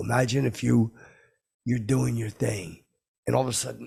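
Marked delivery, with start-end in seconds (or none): none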